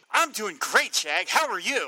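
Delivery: forced, eager, engaged put-on enthusiastic tone. Greeting the co-host at the episode start: put-on enthusiastic tone. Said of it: "you sound really enthusiastic and engaged".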